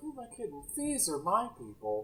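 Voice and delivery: very quiet, sweet delivery. Discussing how a line could be performed, the speaker demonstrates a sweet reading. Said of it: "It could have been like sweet".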